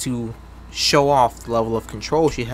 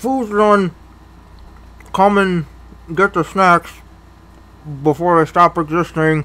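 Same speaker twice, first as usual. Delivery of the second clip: loud, pitched-up talk with a full mouth; 6 semitones higher, 7 dB louder than usual. Narrator voicing a woman speaking to the crew while eating, talking with mouth full. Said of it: "she says with her mouth full".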